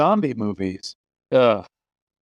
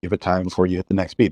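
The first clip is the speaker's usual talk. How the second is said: quick, rattled-off fast delivery. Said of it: "repeats the line".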